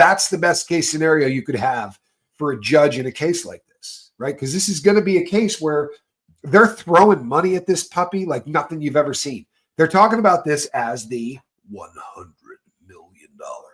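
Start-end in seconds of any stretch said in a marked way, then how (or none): 11.7-13.7 deep, very quiet, very low radio announcer voice. Discussing a costly court case, slipping into a DJ voice. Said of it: "did you like my uh, D J voice on that?".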